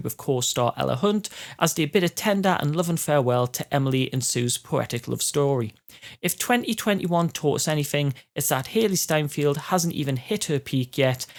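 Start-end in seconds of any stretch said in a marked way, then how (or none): none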